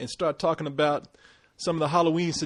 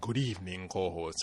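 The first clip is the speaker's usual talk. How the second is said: very low, very soft, hushed, spooky vampire voice; 10 semitones lower, 10 dB quieter than usual. Greeting the co-host on the show, Dracula voice. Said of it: "trying to get my Dracula voice going on".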